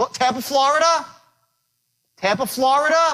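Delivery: Florida ending with pitch rising upward. Demonstrating a phone call introduction to an audience; rising pitch at the end. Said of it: "When you raise your voice up like that".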